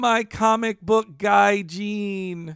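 put-on weepy, very slow, over-enunciated, name drawn out. Retelling the wife's line from the episode: imitating someone crying. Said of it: "crying and says".

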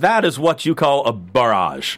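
clumsy, bad British accent, slow, drawn out and shaky. Retelling what Barrett said after the match, attempting a British accent. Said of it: "I can't do a British accent".

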